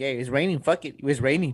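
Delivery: ordinary delivery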